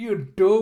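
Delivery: acted, very loud, high, enraged furious yell. Retelling a scene where a character gets super mad: imitating someone getting super mad. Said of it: "Idacotti's just getting super mad".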